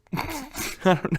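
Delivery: high, giggly laughing through the words.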